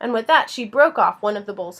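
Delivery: ordinary delivery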